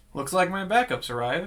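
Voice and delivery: playful joking voice. Speaking in character to another character: joking in character. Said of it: "but very jokingly".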